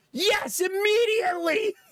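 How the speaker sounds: mock very high, overeager, instant blurt. Retelling an eager answer to being asked about the daddy getting eaten: imitating Jonah's over-enthusiastic yes. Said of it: "Too much enthusiasm".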